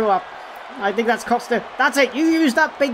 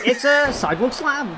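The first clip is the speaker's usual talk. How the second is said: normal talking voice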